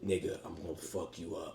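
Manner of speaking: deep, very quiet, soft voice. Retelling how Zenitsu sounded in the dub: imitating Zenitsu's deep voice. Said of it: "you heard the deepness in his voice".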